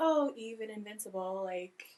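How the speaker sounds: ordinary delivery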